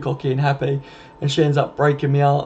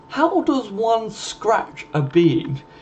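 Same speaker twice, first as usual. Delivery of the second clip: really posh upper-class English accent, high, very slow; 7 semitones higher than usual. Redoing the question about scratching a bean: really posh English accent. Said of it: "as if you were saying it in a really posh English accent".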